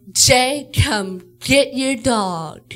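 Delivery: play-acted stern, loud, slow, angry calling out. Retelling a mom calling from the other room: imitating mom sounding mad. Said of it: "She sounds mad".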